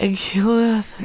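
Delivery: scared, fearful tone. Introducing a spooky-themed marry fuck kill on the podcast, sounding scared. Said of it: "Why are you so scared?".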